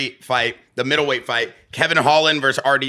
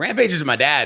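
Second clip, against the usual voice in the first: usual speaking voice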